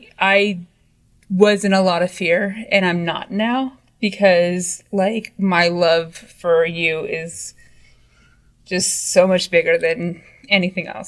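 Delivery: tearful voice, on the verge of crying. Telling the one they love that the fear is gone: on the verge of tears. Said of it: "I'm gonna start crying".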